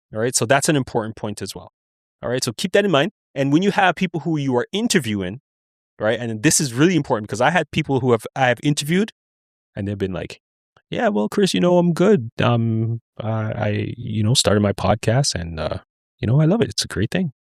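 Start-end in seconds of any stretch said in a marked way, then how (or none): 10.9-17.4 put-on dull, low-energy, unenthused delivery. An interviewer recalls a podcast guest, imitating a low-energy guest. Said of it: "You're not giving me no energy".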